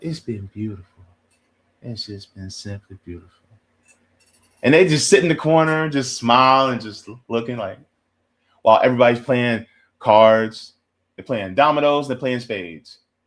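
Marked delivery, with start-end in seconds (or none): 0.0-3.3 put-on soft-spoken, laid-back man's voice, quieter. Imitating a real chill man who never raises his voice: imitating a quiet, chill man. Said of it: "They don't talk very loud".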